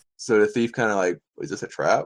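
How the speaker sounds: ordinary talk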